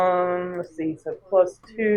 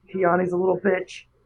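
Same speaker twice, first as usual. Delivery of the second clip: hushed whisper. Player describing their character leaning down over an unconscious man, whispering. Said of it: "I want to lean down and whisper".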